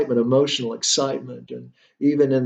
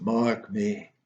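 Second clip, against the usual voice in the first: hushed, spectral, ghostly otherworldly voice; 3 semitones lower, 7 dB quieter than usual. Reading Hamlet aloud, the speaker repeats the ghost's line: ghost impersonation. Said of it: "That's my impersonation of a ghost".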